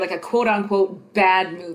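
plain

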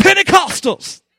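fired-up, enthusiastic, high-pitched excited exclamation. Showing the audience how to say the word, excited "pentecostals". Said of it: "you got to say it with excitement".

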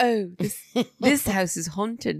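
put-on posh dog voice, light accent. Imitating the fancy dog saying the house is haunted: dog voice with a little accent. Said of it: "he'd say it with a little accent".

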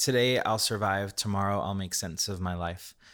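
ordinary talk

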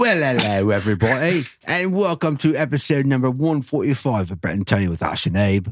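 fake, put-on Australian accent. Podcast host opening the episode and welcoming everybody, put-on Australian accent. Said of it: "Was that Australian or English?".

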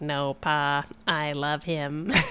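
very slow, flat, level robot drone. Retelling a cartoon plot, quoting the Crushinator in a robot voice. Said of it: "Very good robot voice".

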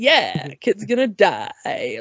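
cheerful, sing-song and unhurried, sounding delighted. Recounting how a performer delivered a line, imitating Jerry Nelson's cheerful line. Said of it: "let me say that as if that's the happiest line I've ever said".

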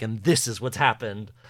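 put-on authoritative tone. Describing Becky explaining the case at her murder board: imitating Becky's authoritative tone. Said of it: "in a very, like, authoritative way".

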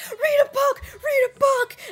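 very high, loud, frantic panicked shriek. Retelling how Brittany panics about something sexual: imitating someone screaming in panic. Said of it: "she's just screaming and panicking so much".

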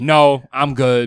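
mock curt, dismissive tone. Imitating a girl turning someone down: imitating a dismissive brush-off. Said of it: "she dubs your shit like".

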